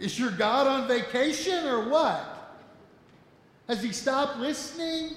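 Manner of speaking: mocking, jeering, goading taunting tone. Retelling Elijah taunting the prophets of Baal, retelling a taunt. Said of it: "he begins to taunt them".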